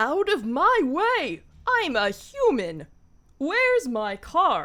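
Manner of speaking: loud, swooping, cartoony bird voice. Asked by another character, the bird does its cartoony human impression. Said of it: "can you do your human impression?".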